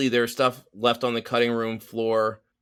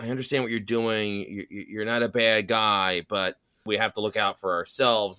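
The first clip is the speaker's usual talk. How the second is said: put-on whisper; 3 semitones lower than usual. Retelling a film scene where Zeus leans in close: imitating Zeus whispering. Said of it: "he sort of whispers".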